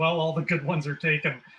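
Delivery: ordinary talk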